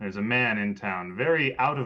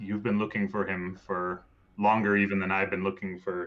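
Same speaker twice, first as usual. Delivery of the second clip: ordinary talk, nothing marked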